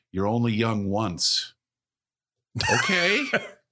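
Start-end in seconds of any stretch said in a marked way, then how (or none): 0.2-1.6 mock dead serious, grave, weighty tone. Retelling another person's remark, the speaker imitates a serious tone. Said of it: "he looks at me really serious".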